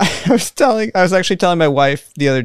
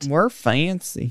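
put-on Southern accent, much quieter; 7 dB quieter than usual. Podcast host teasing about the fancier new recording, in a fake southern accent. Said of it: "I'm going full southern for this whole episode".

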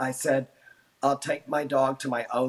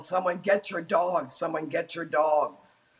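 put-on loud calling out; 3 semitones higher than usual. Answering who they yelled at during a dog attack, retelling a yell. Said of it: "I was just yelling".

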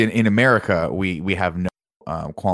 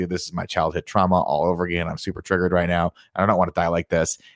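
plain

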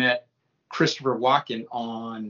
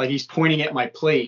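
usual speaking voice

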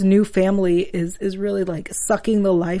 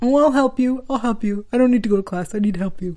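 put-on puppy dog voice; 2 semitones higher than usual. Retelling how Gabe offered Carter help, in puppy dog Gabe voice. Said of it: "that's my puppy dog Gabe voice".

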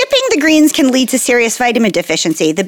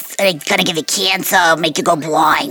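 put-on smoker's voice; 7 semitones lower, 4 dB quieter than usual. Imitating warnings moms give children: cigarette mom voice. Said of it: "I like that you're doing different mom voices".

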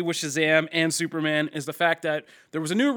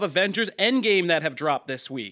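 ordinary talk, nothing marked

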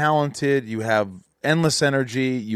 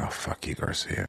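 very quiet, near-whispered mutter under the breath. Acting out an imagined morning remark to the other speaker: muttering under breath. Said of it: "under my breath".

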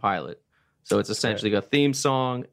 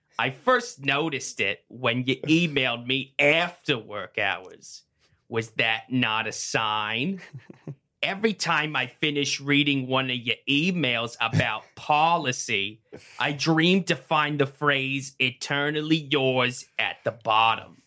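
cartoon witch voice with "sign" drawn out; 3 semitones higher than usual. Reading a secret admirer letter on request, in the Wednesday Morning Cartoons witch voice. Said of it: "this is in the voice of the witch".

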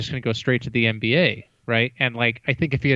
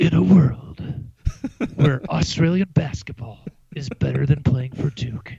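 epic movie trailer voiceover narration; 2 semitones higher than usual. Podcast co-host, urged by another to try it, uses a movie trailer voice. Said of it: "you got to do a movie style voice".

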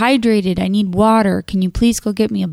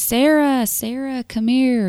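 high, drawn-out yell, calling out from afar; 5 semitones higher than usual. Retelling a man yelling her name from the restroom, retelling a yell. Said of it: "Yelling my name".

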